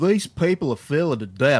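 loud, dumb-sounding, overdone, exaggerated Southern accent. Imitating a man who lives in Florida, dumb exaggerated Southern accent. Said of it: "I'm just going to do a dumb Southern accent".

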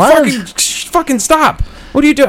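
high, yelled protest tone. Retelling how an old lady kept slapping his arm, acting out yelling at her. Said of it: "I start yelling at this old lady".

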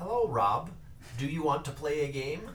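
put-on machine-like robotic computer voice. Greeting rob after recommending the war games events, in a robotic computer voice. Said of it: "your voice is almost exactly like a".

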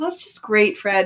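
put-on sarcastic voice. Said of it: "More sarcastic Hiram".

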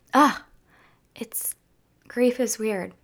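emotional, choked-up voice right on the edge of crying. Apologizing for getting emotional while speaking about grief: emotional, close to tears. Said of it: "Pardon me for getting emotional".

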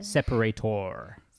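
separator with full "-tor" ending, American accent. Showing how people in America would say separator, American accent. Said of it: "How would they say that in America?".

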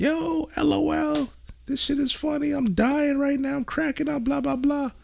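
high-pitched falsetto female voice. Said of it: "she's texting me".

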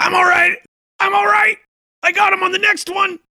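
high-pitched shouting. A game master voices a zombie dwarf during a fight, yelling out. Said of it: "And he yells out and he says".

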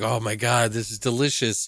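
ordinary talk

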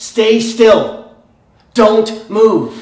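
loud, urgent, commanding, drawn-out yell. Acting out a mother warning her child at a busy road: imitating an urgent yell. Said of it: "she yells urgently".

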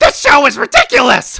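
shrill, very loud, high yelling rant at full blast. Talking about Doug Walker, a speaker slips into a yelly Doug Walker voice. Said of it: "he has the yelly voice".

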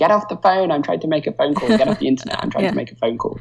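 put-on screaming, scolding parent voice. Retelling being told off over dial-up: imitating parents screaming. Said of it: "my parents scream at me".

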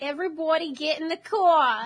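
loud, bad put-on Jersey accent drifting toward Australian. Trading accents during a chat about Cockney slang, a speaker tries: attempted Jersey accent. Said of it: "I can do a Jersey accent".

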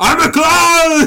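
mock action-hero bellow, very high, slow, loud.

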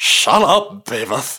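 goofy put-on cartoon character voice, lisping. Two hosts trading voice impressions, doing a put-on impression voice. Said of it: "people hate those voices".

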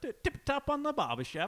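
English accent, pitched high. Asked how you'd impersonate an English guy, you try one: English accent impression. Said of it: "doing an impersonation of an English guy".

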